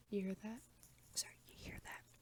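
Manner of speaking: whispering. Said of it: "we're just gonna whisper in this bitch".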